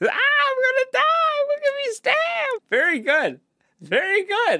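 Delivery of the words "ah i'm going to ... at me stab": very high-pitched, squealing cry. Retelling a movie scene where a character trips off a train: imitating a squeal. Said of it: "Good squeal there".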